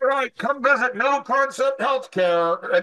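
pretend shouting. Showing how you run outside to get your business name out: mock yelling. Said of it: "why are you yelling at me?".

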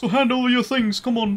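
very high, harmless-sounding, unthreatening bandit voice. A game narrator voices a bandit confronting the players, unintimidating bandit voice. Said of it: "a very unintimidating voice".

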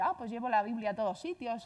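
plain

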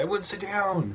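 mock high-pitched scream. Retelling a store incident where one guy started screaming, retelling a scream. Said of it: "One guy just started screaming".

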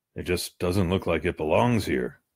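ordinary talk

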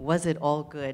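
ordinary delivery

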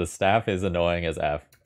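ordinary delivery

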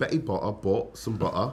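put-on laughing Cockney accent with the T's dropped.

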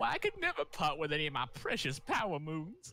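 put-on sassy woman's voice.

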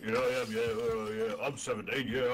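put-on deep voice. Answering taunts of posh boy trying to be cockney, in a put-on deep voice. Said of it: "I've got a deep voice on".

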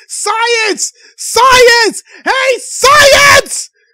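very loud, high, drawn-out yell of one word. Speaker mocks a woman people can't take seriously, mock-yelling "science!". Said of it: "she's just yelling".

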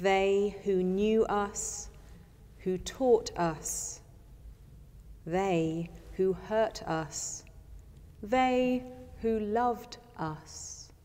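unhurried, slow, meditative reading. Reading a meditation aloud to listeners: slow meditative reading. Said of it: "I will read it slowly as a spoken meditation".

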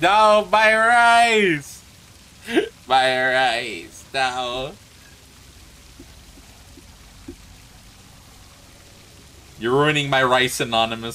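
loud, teary, joking, laughing through tears. Thanking a donor for $50 on stream, teary, joking through tears. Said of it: "I'm getting tears in my rice".

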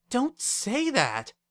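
sharp, cutting, very high delivery. Wendy answers Lyra, who says she is quitting school, said sharply. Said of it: "Wendy said sharply".

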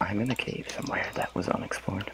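whispering. Player answering a teammate asking where they are, whispering. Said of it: "Why are you whispering?".

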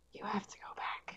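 eerie creature whisper. A creature answers someone asking where they are: creature whispering. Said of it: "And then it just whispers".

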